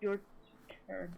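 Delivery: indistinct, half-swallowed mumbling. A character sags with relief, then speaks: mumbling. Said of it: "he sort of mumbles".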